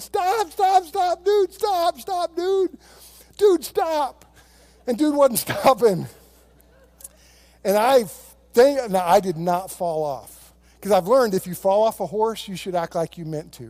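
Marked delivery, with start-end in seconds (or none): 0.0-4.3 acted out very high, frantic, stretched-out screaming. Retelling sliding off a running horse, yelling at it to stop: retelling own screaming. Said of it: "I'm screaming".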